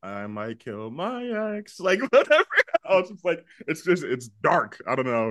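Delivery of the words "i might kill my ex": relaxed, thoughtful, unhurried tone. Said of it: "tumbling the idea in her head".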